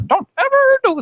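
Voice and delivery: high, cartoonish woman's tone. Imitating a weird cartoon lady talking to her kid: imitating the weird cartoon lady's tone. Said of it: "In that tone of voice".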